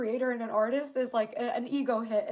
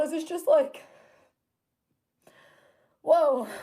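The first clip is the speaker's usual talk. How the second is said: choked up, overwhelmed, emotion welling up; 4 semitones higher, 6 dB louder than usual. Describing putting months of work into something that flopped, emotional, choked up. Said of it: "I'm sorry for getting so emotional".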